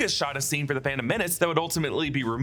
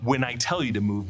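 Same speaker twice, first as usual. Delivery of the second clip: plain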